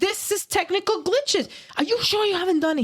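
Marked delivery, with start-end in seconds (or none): 1.8-2.8 mock furious, angry screaming. Retelling what a border officer asked: imitating an officer screaming. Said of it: "He's screaming at me".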